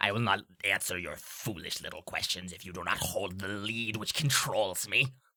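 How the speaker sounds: deep creature voice. The game master voices a creature answering the players' questions, in a creature voice. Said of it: "and it goes".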